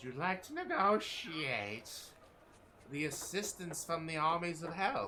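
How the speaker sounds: impish little demon voice. Game master voicing an imp who looks up at a player, imp voice. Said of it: "The imp looks up at you and says".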